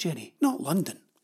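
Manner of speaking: usual speaking voice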